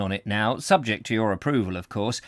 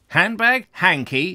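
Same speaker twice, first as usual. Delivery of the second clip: scornful, dismissive, contemptuous tone with pitched-up delivery; 7 semitones higher, 3 dB louder than usual. Narrator reading mr. jerome answering mr. pavarius's question, contemptuous. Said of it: "Mr. Jerome said contemptuously".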